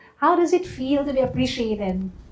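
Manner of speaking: ordinary delivery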